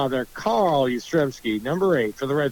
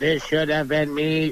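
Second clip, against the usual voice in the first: flat, machine-like robot voice; 2 semitones higher than usual. Joking about a frozen head coming back to speak, robot voice. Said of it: "robot voice".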